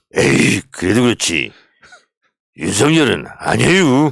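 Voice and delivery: speech in Chungcheong dialect. Going through regional versions of a phrase and asked for the next one, use Chungcheong dialect. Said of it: "충청도 한번 가봐요".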